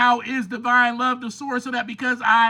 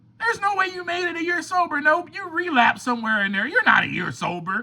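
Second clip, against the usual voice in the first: high-pitched, dismissive, belittling voice; 5 semitones higher than usual. Retelling what the inner critic said about being sober: acting out inner critic. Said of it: "that voice was even coming in there".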